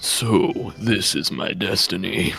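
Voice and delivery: dramatic villainous anime-style voice. Showing how the character should sound, in an anime villain voice. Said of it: "like an anime villain".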